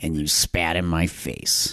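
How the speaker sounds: low, slow, drawn-out villain-like voice. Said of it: "And even that voice, too, that he does".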